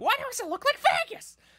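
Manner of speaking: very high-pitched, shrill, banshee-like screeching. Quoting a favourite line from a YouTube critic's video, screeching like a banshee. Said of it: "screeching like a banshee".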